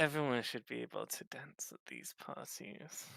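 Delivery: very hushed, forced through clenched teeth. Speaking in character about dancing at these parties, through gritted teeth. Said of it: "Through gritted teeth".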